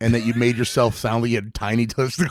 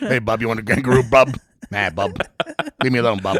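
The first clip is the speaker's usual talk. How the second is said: rough, gruff, dismissive voice, one word repeated over. Doing a bit saying Bub a lot, Hugh Jackman gruff voice. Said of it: "You just say Bub in a gruff voice a bunch".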